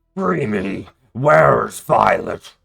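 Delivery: very loud, rough, bellowing dragon roar. Voicing a captive creature that interrupts the players: roaring. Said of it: "The other one roars and interrupts you".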